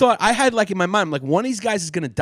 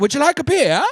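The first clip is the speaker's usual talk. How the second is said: put-on high-pitched German accent. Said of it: "Oh, they had that accent?".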